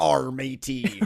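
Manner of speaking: put-on pirate accent. Retelling how a character knocks on a door asking for work: imitating a pirate accent. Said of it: "a change of accent".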